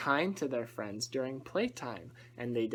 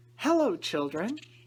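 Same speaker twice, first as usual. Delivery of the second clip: sweet, high, raised sweet-sounding tone; 6 semitones higher, 6 dB louder than usual. Returning teacher greets the children in the classroom, in a sweet voice. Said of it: "said a sweet voice".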